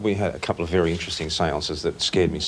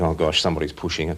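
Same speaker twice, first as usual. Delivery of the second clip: plain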